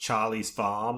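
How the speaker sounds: clumsy, bad, fake Australian accent. Showing how the film's Australian characters say the title: bad Australian accent. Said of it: "That's probably a bad Australian accent".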